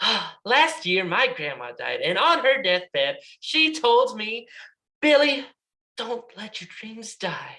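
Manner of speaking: cheerful, upbeat, excited, happy voice with swooping pitch. Demonstrating a sad story told with a big smile, excited, happy voice. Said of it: "they tell a sad story in a very excited, happy voice".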